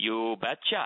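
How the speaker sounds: imitated, put-on thick Norwegian accent. Retelling asking her father for permission to marry, in Mr. Freitag's thick Norwegian accent. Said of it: "in his thick Norwegian accent".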